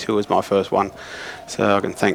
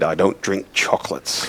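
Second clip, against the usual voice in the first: put-on thick, heavy Scottish accent; 3 semitones lower than usual. Retelling what a coach said when given chocolates: imitating a thick scottish accent. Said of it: "in his thick Scottish accent".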